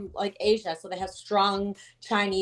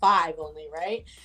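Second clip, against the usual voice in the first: normal talking voice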